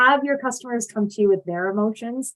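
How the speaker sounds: plain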